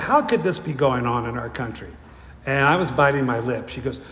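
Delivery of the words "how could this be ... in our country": ordinary delivery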